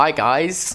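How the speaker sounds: put-on American accent. Asked to give a bit of the american accent, the speaker tries an american accent. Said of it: "do give us a bit".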